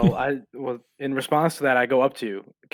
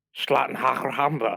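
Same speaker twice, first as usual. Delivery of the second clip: sneaky, secretive gibberish aside. Playing a character who mutters a curse at a kid: under his breath. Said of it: "under my breath I go".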